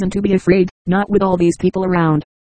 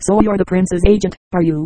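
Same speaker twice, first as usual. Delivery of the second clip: ordinary delivery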